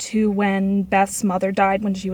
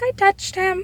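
put-on tiny, very high little-kid voice; 12 semitones higher than usual. Retelling a girl's answer to a therapist in a video, imitating a little kid voice. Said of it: "in little kid voice".

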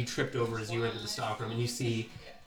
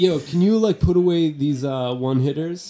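very loud, high, slovenly shop clerk voice; 6 semitones higher, 9 dB louder than usual. Voicing the clerk behind the counter greeting the players: large slovenly clerk voice. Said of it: "He goes".

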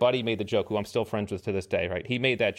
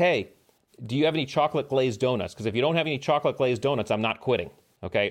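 mild, lightly done shouted-style yell; 4 semitones higher than usual. Telling a story, the speaker retells what the guy next to him yelled at the instructor. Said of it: "he yells".

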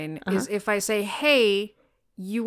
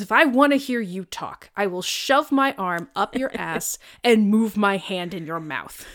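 acted-out, enraged, boiling-over furious tirade. Retelling a movie scene where Samuel L. Jackson rages at Will Ferrell; mock-furious Samuel L. Jackson rant. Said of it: "Samuel Jackson just flies into a rage".

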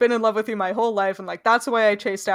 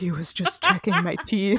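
sexy, seductive stage whisper. Retelling a moment involving Hermie and teeth-checking, imitating a sexy half-whisper. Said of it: "like sexy whispery".

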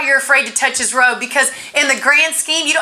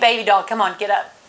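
put-on gentle, loving, tender coaxing voice; 5 semitones lower than usual. Retelling Jesus telling a girl to get up, imitating Jesus speaking tenderly. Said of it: "He's so tender".

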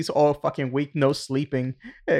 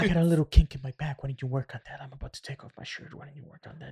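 way too calm, flat delivery; 4 dB quieter than usual. Retelling a parody video's lines: too calm Willy Wonka voice. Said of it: "for the Willy Wonka, it was too calm".

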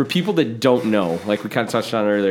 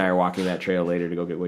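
plain

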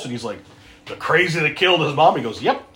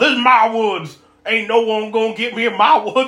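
put-on drunk man's yell, higher pitched; 6 semitones higher than usual. Retelling a movie scene where a drunk man yells at another man: imitating someone yelling. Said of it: "starts yelling at Kyle".

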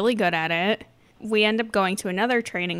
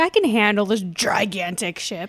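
mock cocky boastful tone; 4 dB louder than usual. Imitating a trainee who is too cocky, mock cocky boast. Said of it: "she's a little too cocky".

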